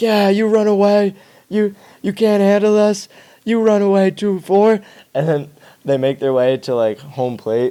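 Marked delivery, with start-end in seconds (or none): 0.0-4.8 high, jeering, mocking taunt. Retelling fans taunting a player jogging in: imitating mocking taunts. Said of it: "roasting me the entire way".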